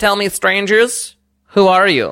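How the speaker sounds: stately frog monarch voice. Voicing the frog king questioning strangers: frog king addressing strangers. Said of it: "the king lifts his hand to silence the crowd".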